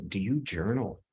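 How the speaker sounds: low, soft, calm tone. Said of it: "kind of calm tone".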